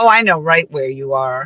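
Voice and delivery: snide, snarly, biting sarcasm. Retelling what a woman in the chat said: imitating a snarly, sarcastic woman. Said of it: "she got kinda snarly and, like, sarcastic".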